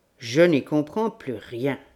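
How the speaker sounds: ordinary delivery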